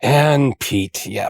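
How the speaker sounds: put-on, mock-exasperated voice. Teasing a co-host over how they introduced themselves, imitating Pete sounding exasperated. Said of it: "You sound so exasperated".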